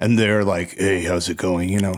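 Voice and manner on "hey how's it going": casual, deep demon voice. Imitating young guys who always talk in that voice: imitating a guy's demon voice. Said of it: "some guys who have that voice".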